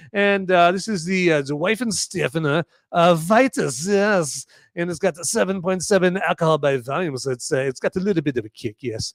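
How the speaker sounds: put-on, poor German accent. A show host talks to viewers in a bad German accent. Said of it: "I'm going to stop talking that way".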